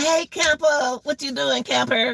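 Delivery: playful, high-pitched tone. Showing how it sounds when playing with the dog: imitating own voice playing with dog. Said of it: "You know you heard my voice".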